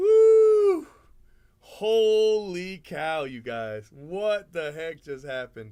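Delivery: very loud, swooping, ecstatic, thrilled shouting. Reacting to pulling a big card in a case break: excited yelling. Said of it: "Don't tell anybody I yelled like that".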